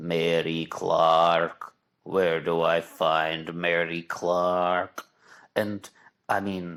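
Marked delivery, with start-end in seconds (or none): 0.0-5.0 bizarre, creepy voice in a very slow drawl. Retelling a movie scene, imitating the man's creepy, bizarre voice. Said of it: "very creepy and um, bizarre voice".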